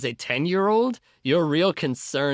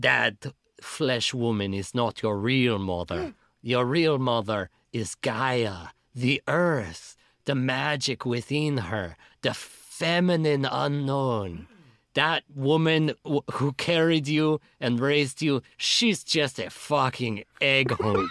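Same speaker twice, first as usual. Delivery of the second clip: snarling, small cat-like voice. Narrator voicing a cat speaking to a new fairy, in a snarling cat voice. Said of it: "He snarls up his little cat nose and says".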